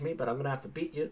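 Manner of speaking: bad fake Australian accent. Attempting an australian female accent, bad fake australian accent. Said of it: "That was not an Australian accent at all".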